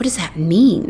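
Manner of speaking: in a whisper. The drunken girl asks about the boy's words, whispering. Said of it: "The drunken girl whispers".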